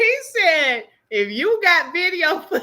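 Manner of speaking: talking through held-back giggles. Retelling what he said, trying not to laugh: laughing while talking. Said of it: "I'm trying not to laugh".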